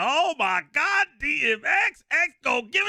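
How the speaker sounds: very high, rising, drawn-out frenzied starstruck cry. Retelling a woman yelling at a car at a gas station, imitating her going nuts. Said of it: "She's going nuts".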